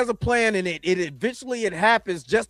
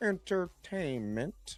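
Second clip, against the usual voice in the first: hushed, quiet cartoon-villain delivery; 3 semitones lower, 13 dB quieter than usual. Talking about entertainment, the speaker says the word the way Dr. Evil would: Dr. Evil voice. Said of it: "let me say it like Dr. Evil".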